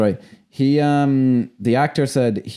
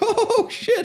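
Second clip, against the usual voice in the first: put-on laughing, higher. Retelling how a character in a film reacted: imitating someone laughing. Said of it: "and he's just, like, laughing".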